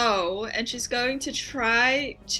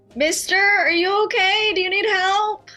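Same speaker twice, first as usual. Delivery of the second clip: loud yelling, pitched high; 8 semitones higher, 8 dB louder than usual. Opening a door slightly and calling out to a man: yelling to a stranger. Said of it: "I'm gonna yell".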